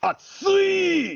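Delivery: very high, shrill, stretched-out scream. Sharing a favorite japanese word, meaning hot: screamed 'atsui'. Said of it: "when you scream it like that".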